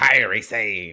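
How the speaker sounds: put-on pirate accent. Suggesting how a name should be announced at an entrance, put-on pirate accent. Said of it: "I'm saying Kairi, but in a pirate accent".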